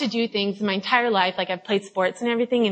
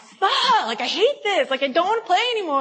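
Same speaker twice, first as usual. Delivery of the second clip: acted, very high, fed-up, frustrated yelling; 10 semitones higher than usual. Retelling a bad night of bowling, retelling her own yelling. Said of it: "And I'm just like yelling".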